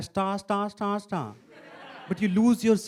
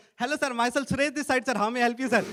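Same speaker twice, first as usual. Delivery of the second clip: polite, scripted call-centre agent voice; 4 semitones higher than usual. Finally reaching customer care on the phone and hearing the agent: imitating a customer-care agent. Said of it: "But what you hear".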